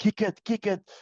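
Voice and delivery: put-on high, urgent screaming. Retelling a teammate screaming at the kicker: imitating someone screaming. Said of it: "his center screaming at him".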